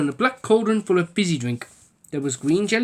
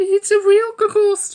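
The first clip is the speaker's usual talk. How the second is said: nervous squeaking, very high; 13 semitones higher, 5 dB louder than usual. Narrator reads Giggle's line on seeing the ghost, squeaking. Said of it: "she squeaked".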